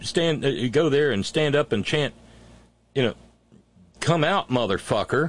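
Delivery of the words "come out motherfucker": ordinary talk, nothing marked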